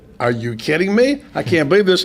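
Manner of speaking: ordinary talk, nothing marked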